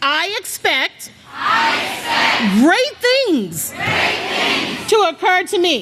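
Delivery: emphatic, full of conviction in every word. Speaker leading a group in repeating a phrase, saying it with full conviction. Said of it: "say it like you mean it".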